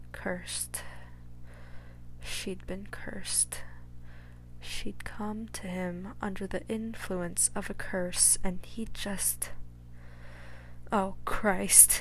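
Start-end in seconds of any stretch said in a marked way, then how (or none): 10.9-12.0 rasped, hoarse, rasping exclamation. Realizing she came to him under a curse, he pushes himself away, rasping. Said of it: "he rasped".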